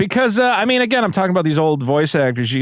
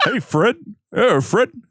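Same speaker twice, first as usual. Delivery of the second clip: put-on cartoon caveman voice, higher; 5 semitones higher than usual. Asked how the cartoon voices sound, doing Barney Rubble: Barney Rubble voice. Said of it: "Barney Rubble was".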